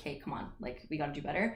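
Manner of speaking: plain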